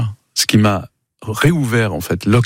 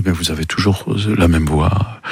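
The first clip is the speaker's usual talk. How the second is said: plain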